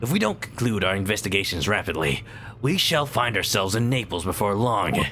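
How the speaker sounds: own voice made gruff. In a Sholmes detective sketch, a character urges a quick investigation, gruff voice. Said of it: "I'm just doing my voice, but gruff".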